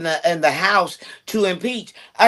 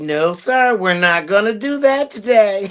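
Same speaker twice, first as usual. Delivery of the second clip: put-on nice, pleasant tone. Retelling how she turned down the president: imitating a nice voice. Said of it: "she said it with such a nice voice".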